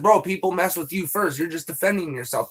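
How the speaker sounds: ordinary delivery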